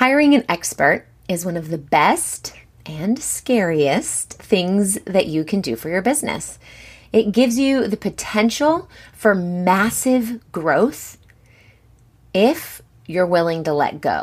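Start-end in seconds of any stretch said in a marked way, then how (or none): 7.1-14.2 slow, measured, carefully enunciated, deliberate emphasis. Telling listeners what hiring an expert can give them: slow, loud and clear. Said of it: "I say that slowly and loudly and clearly".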